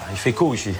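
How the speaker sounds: put-on northern Ch'ti accent, chaud flattened to co.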